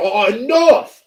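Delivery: acted-out, high-pitched, judge-style yelling. Retelling how the judge banged his gavel: imitating the judge yelling. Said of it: "and he yelled".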